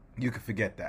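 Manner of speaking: low, firm, dismissive voice. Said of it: "He has the gravitas to be able to be like".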